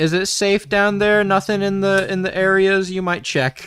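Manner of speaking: loud, high-pitched yelling. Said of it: "I'm gonna yell down to the hole to Leroy".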